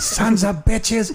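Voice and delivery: put-on, very high yelling. Retelling how dad yelled at the TV during football: imitating dad yelling. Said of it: "you hear this grown man yelling".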